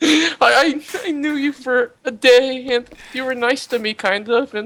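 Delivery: crying while speaking. A player in a tabletop game speaks to a fallen character while looting her, crying. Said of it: "I'm crying as I loot her".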